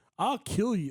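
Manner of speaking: smug, cocky voice. Retelling a fighter's post-fight threat, imitating a cocky threat. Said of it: "the way he said it".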